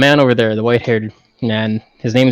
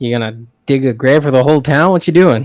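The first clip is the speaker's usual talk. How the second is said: mocking, sarcastic, jabbing tone; 2 semitones higher than usual. Questioning a fellow character about digging graves, in character: sarcastic. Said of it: "I'm being sarcastic".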